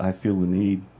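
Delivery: ordinary talk, nothing marked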